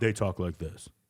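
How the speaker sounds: extremely low, deep, way-down put-on voice. Describing women whose voices dropped after testosterone: imitating a very low voice. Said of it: "their voice is, like, mad low".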